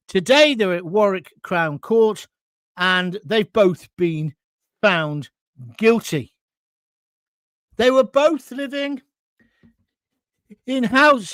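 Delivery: voice catching, halting, breaking phrases, getting upset. Reporting on a court case, getting a bit upset. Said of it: "I'm getting a bit upset".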